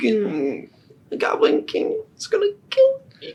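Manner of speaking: weeping goblin voice. A goblin offered protection if he helps the group, Buggut crying. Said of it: "He starts crying".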